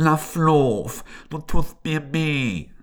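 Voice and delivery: talking through the nose. Narrator reading a story, voicing the young elephant's pained reply: speaking through the nose. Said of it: "durch die Nase sprechend so".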